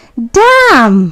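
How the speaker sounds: mildly surprised, a little taken aback. Acting out realizing a purse was left at home, mildly surprised. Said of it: "अब ये थोड़ी हैरानी में बोल रहे हैं".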